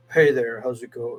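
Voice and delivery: mock, exaggerated, put-on deep voice. Imitating the fake deep voice another man uses, his fake deep voice. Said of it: "that fucking deep voice he does".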